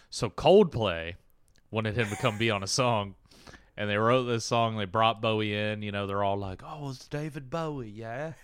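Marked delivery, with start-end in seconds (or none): 6.6-8.3 slow, excited put-on Cockney accent. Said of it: "Just Cockney again. It's all Cockney".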